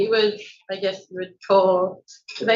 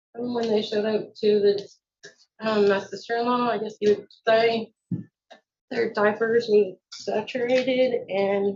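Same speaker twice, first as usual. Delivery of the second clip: nervous, halting stammer, tripping over words; 4 dB quieter than usual. Answering a questioner about the children's condition, nervous and stuttering. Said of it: "I'm like stuttering, I'm really nervous".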